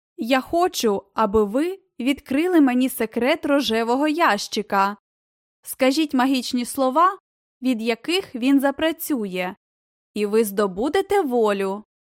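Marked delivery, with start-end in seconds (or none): none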